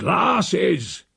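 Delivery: raspy, rough, high shouted call. An uncle calls after the woman who brought the wine, yelling. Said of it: "yelled my Uncle Silas".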